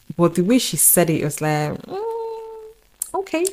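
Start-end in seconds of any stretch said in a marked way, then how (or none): 1.8-3.5 sarcastic, reluctant, high, soft, drawn-out mm. Retelling how a mom answered about the hostel: imitating mom's sarcastic reluctance. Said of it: "She was being sarcastic too".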